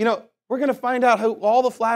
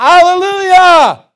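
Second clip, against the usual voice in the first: high, loud, drawn-out screaming shout. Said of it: "gonna yell and scream".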